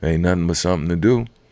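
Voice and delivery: acted, calm, cool-headed, quick offhand delivery. Quoting an uncle talking about fighting, imitating his calm voice. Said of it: "he'd say with a real calm voice".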